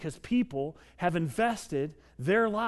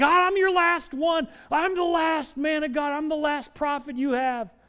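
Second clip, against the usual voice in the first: put-on high, whiny, complaining tone; 8 semitones higher, 5 dB louder than usual. Retelling how a frightened prophet complained to God: imitating Elijah whining. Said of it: "he's whining, complaining to God".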